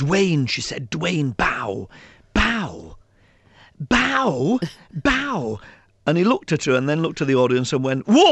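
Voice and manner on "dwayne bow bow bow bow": large, very slow stage whisper, each word stretched. Retelling a play, the speaker quotes the teacher calling offstage to a performer: loud stage whisper. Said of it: "large stage whisper from the teacher".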